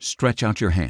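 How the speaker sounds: ordinary delivery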